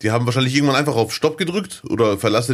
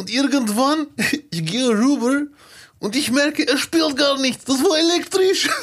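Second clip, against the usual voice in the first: put-on poor Ukrainian-Russian accent. Telling listeners a story, in a bad Ukrainian-Russian accent. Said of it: "die schlechteste ukrainisch-russische Parodie aller Zeiten".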